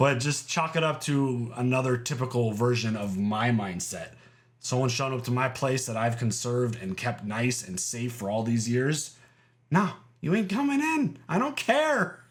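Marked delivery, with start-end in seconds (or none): 9.7-12.1 high voice breaking mid-line. Acting out turning someone away from a safe home, voice cracking. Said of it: "did your voice just".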